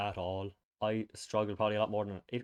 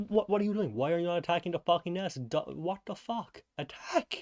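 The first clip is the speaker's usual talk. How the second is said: mock yelling, high-pitched; 8 semitones higher than usual. Retelling a failed game attempt, imitating his own yell at the TV. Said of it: "I was there yelling at the T V".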